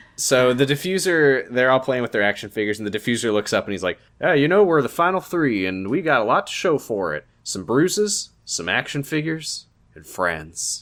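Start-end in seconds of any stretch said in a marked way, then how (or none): 4.2-10.8 slow, put-on southern drawl. Imitating the diffuser talking about being in the final three, in a southern accent. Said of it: "That's his southern accent".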